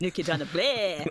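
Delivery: fake count-style vampire accent. Retrying the punchline of a vampire joke: Count-style vampire accent. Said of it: "that's a count".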